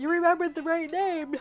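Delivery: loud, high yawn carried through the words. Going over a part, the speaker talks while yawning. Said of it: "The yawns have set in".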